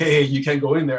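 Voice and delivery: plain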